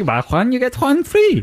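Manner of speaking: high-pitched, cheesy, exaggerated mock Spanish accent.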